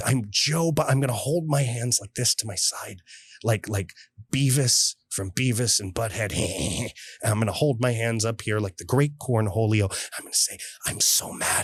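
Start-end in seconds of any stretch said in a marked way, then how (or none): 10.9-11.6 put-on politician whisper, quieter, much slower. Acting out being irate with one imitation after another, say it whispering like Joe Biden. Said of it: "I have to whisper like Joe Biden".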